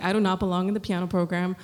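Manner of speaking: normal talking voice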